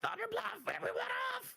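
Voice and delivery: very high, piercing, shrill, fast goblin voice. Narrating the scene to the players, voicing a goblin in a shrill goblin voice. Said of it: "there's a shrill voice of a goblin saying".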